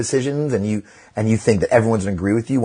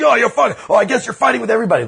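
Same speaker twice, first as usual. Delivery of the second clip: play-acted very high-pitched, shrill shouting; 13 semitones higher, 3 dB louder than usual. Retelling a driver in a parking lot yelling at the speaker: imitating someone yelling. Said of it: "I saw this guy yelling and he's just yelling at me".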